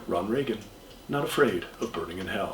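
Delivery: very quiet, hushed, toned-down smugness. Retelling a new batch of commercials: Ron Reagan Junior, less smug. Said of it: "He's lowered the smugness".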